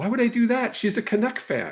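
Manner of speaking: high, incredulous, disbelieving tone.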